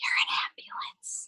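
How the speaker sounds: soft, hushed whisper, very close. Telling a joke, acting out the dad whispering to his son: whispering. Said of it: "he whispers in his ear".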